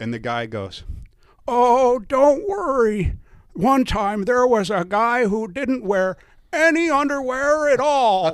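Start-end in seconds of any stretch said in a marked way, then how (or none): 1.5-8.3 put-on very high, loud, shrill, slow, drawn-out old man voice. Retelling what the friendly marshal told nervous newcomers: Floyd Wiggers impression. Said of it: "I'm gonna do a little impression of him".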